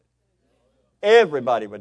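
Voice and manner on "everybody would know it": everybody hit loud and stressed. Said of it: "everybody'd know it".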